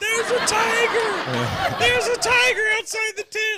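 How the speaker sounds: shrill, very high, loud, panicked top-of-the-lungs scream. Retelling a camping night, speaker acts out their sister waking: retelling Tara's top-of-lungs scream. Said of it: "bolts straight up screaming at the top of her lungs".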